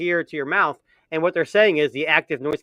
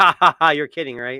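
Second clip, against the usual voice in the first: imitated mocking laughter. Retelling how a company replied to a request: imitating mocking laughter. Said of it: "it's pretty much laughing".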